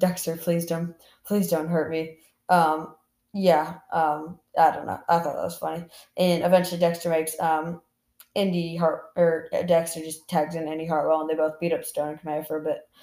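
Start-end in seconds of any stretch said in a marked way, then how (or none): 0.0-2.2 put-on pleading voice. Retelling a wrestling match, quoting a wrestler begging on his knees: imitating Stone pleading. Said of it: "on his knees, like, pleading".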